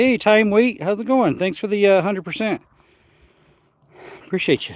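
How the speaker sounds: winded, catching breath. Thanking a viewer while outdoors in the desert: out of breath. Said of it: "Gotta catch my breath".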